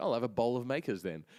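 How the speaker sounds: mock cheeky, sassy, smart-aleck tone. Retelling own reply to a bartender, imitating own sassy reply. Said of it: "don't get sassy".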